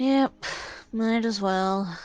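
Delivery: grudging, flat, unenthusiastic tone. Answering in character about joining the group in the cargo bay: unenthusiastic. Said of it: "Don't sound too excited".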